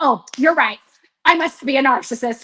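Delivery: ordinary delivery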